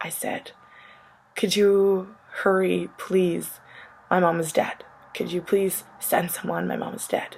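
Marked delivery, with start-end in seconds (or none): 1.3-7.4 acted, hysterical, panicked pleading. Retelling her call to 911 after her grandpa told her to, retelling hysterical pleading. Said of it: "I was hysterical".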